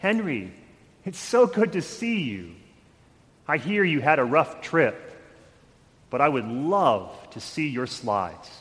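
gentle, kind, gracious voice. Retelling a story of God speaking: God's gentle, kind, gracious voice. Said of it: "in this gentle, kind, and gracious voice".

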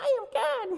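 tiny, very high, squeaky little chipmunk voice. Storyteller voicing God answering from a speck of Earth, in a little chipmunk voice. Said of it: "in this little chipmunk voice".

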